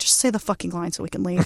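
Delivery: put-on low, worn-out, fed-up exasperation. Retelling how the entire film cast reacted by the end of filming, mock fed-up exasperation. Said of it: "the entire cast is so done".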